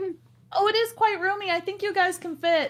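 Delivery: small, distant, muffled voice. Voicing a character buried inside a huge dress: little muffled voice from beyond. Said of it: "a little voice from beyond going".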